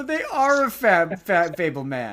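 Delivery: very loud, drawn-out, swooping, stammering sing-song. Pretending to be the other speaker retelling the film: imitating the other speaker. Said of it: "I'm pretending to be you".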